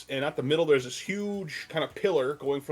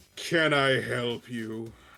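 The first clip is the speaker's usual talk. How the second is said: deep, big, disembodied voice; 3 semitones lower than usual. A game narrator voices a presence heard in the room, booming voice. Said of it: "you hear this booming voice in the room".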